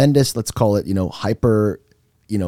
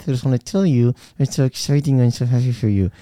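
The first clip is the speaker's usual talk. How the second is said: forced cheerful tone through gritted teeth; 4 semitones higher than usual. Speaker acts out congratulating someone at a wedding, mock-happy through gritted teeth. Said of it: "And through my teeth".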